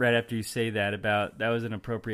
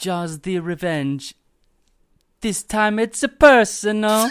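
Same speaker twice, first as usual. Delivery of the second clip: shrill, loud, high-pitched, booming Australian accent; 10 semitones higher, 9 dB louder than usual. A player says a movie tagline in a round of accent attempts, australian accent. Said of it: "Perfect Australian accent".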